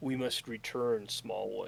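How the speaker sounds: frightened voice. Game master voicing Ulos after a creature vanishes into the forest, fearful Ulos voice. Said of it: "you can actually see fear in his face".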